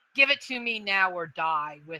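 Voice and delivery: growled, snarling, menacing dragon voice. Voicing a dragon as another character approaches with meat, in a growling dragon voice. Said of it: "she growls and she goes".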